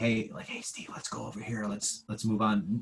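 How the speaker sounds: imitated whisper. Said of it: "it whispers".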